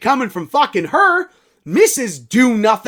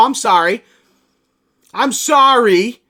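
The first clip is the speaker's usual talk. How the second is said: slow, sarcastic, plainly insincere tone; 4 dB louder than usual. Apologizing to listeners for dropping a segment: sarcastic apology. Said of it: "It was sarcastic sorry".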